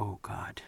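very soft, voiceless terrified whisper. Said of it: "you can hear it in Captain America's voice".

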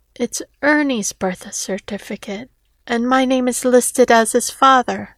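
ordinary delivery, nothing marked

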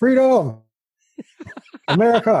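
put-on high-pitched hollered shout in Boston accent. Retelling a fan at a ballpark game: imitating a yell in a Boston accent. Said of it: "somebody in a Boston accent yelling".

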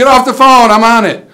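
very high, very loud, shrill holler. Recalling someone in the kitchen picking up the phone, retelling a holler. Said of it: "I'd have to holler".

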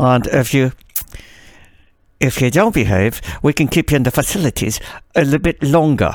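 spoken through clenched teeth, jaw unmoving. Imitating a woman who talks with her teeth clasped, through clenched teeth. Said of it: "She talks with her teeth clasped together. Let's see if I could do it".

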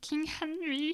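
goofy frog puppet voice. Being silly early in the morning, Kermit the Frog voice. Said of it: "That was my Kermit voice".

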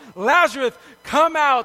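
loud call. Explaining why the call was said so loud, imitating a loud call. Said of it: "Why do you think he said it that loud?".

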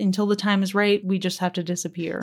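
ordinary delivery

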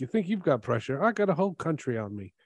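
put-on slight British accent, lightly done. In talk about football, act out Harry Kane's answer about pressure with a bit of British accent. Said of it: "A bit of British accent".

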